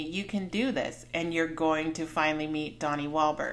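ordinary talk, nothing marked

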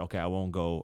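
ordinary talk, nothing marked

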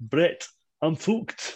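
put-on Wigan accent. Quoting the iconic line from the match, in a Wigan accent. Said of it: "do that Wigan accent better than me".

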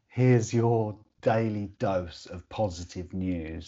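normal talking voice

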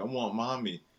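imitated crying little-kid voice. Retelling how she cries when put to bed: imitating a crying child. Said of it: "she be crying, like".

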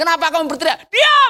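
mock irritated, angry scolding tone, high pitched. Retelling the Bible story, the speaker voices the crowd: acting out an angry rebuke. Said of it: "Mereka pada marah".

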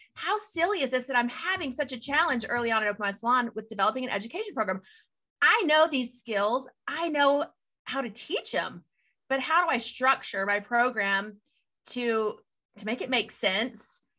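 normal talking voice

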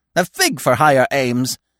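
cheerful, cheery cry. A woodpecker answers a scolding squirrel before flying off, cheerful cry. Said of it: "he cried cheerfully".

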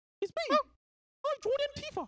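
very high, little cartoon squeak. Asked whether they can do Mickey, the speaker tries a Mickey Mouse voice. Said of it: "can you do Mickey?".

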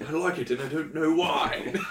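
high-pitched put-on British accent. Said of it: "Not there".

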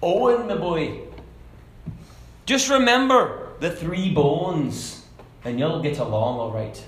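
put-on Irish brogue accent. Telling a story, quoting an old Irishman's advice to a boy boarding a ship, Irish accent. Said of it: "So that was a Scottish accent".

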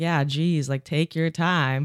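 put-on teasing sarcasm, light and jokey. Retelling a joke said to people on a staircase: retelling own sarcastic remark. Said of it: "being sarcastic".

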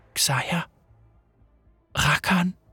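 soft, hushed half-whisper. A woman speaks two names, half-whispering. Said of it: "flüsterte [name]".

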